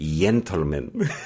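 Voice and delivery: "gentlemen" drawn out slowly in Spain Spanish accent.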